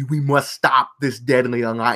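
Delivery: over-enunciated, every letter pronounced, heavy emphasis. Imitating a game voice actor's line, over-enunciated with heavy emphasis. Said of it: "He's like enunciating every letter in the word".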